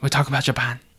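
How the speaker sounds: fairly convincing put-on Japanese accent. Announcing today's topic, trying it out in a Japanese accent. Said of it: "That was a pretty good accent".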